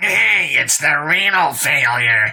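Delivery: nasal, needling, jabbing tone. A guard taunting the arriving driver, in a nasal voice. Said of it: "A nasally voice jabbed".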